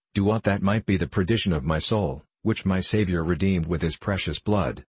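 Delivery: ordinary delivery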